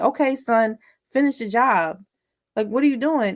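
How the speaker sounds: ordinary talk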